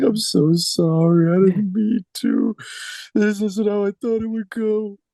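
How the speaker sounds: very high, tearful sobbing through the words. A player voices an inconsolable character muttering apologies, sobbing. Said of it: "I'm just sobbing and just um".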